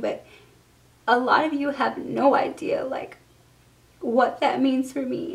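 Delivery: emotional voice, on the verge of crying. A YouTuber speaking to viewers, emotional and near tears. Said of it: "I don't mean to get emotional or start crying".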